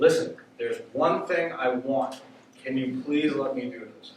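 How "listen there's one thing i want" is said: ordinary delivery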